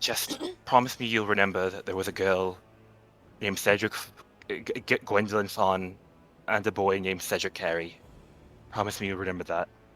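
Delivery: hushed half-whisper under the breath. Playing a character speaking to another character in a scene, half-whispering. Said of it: "I just whispered".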